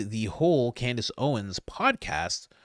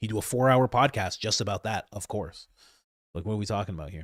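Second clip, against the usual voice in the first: usual speaking voice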